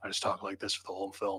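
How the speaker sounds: very low, very quiet, hushed voice. Answering praise of his Batman voice by demonstrating it, in a Batman voice. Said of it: "really, really low".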